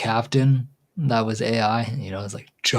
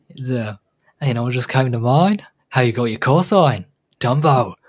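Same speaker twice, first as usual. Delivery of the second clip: loud put-on Australian accent; 5 dB louder than usual. Recalling the time he used an australian accent, the speaker quotes that character in it. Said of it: "used the uh, Australian accent".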